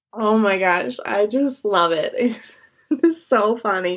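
speech broken by bursts of laughter. Describing a funny movie scene, laughing while talking. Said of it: "crying laughing to myself right now".

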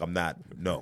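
ordinary delivery

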